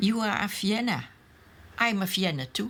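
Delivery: ordinary delivery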